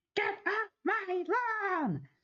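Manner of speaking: very high, slow, drawn-out shouting.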